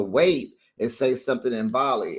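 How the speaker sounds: ordinary delivery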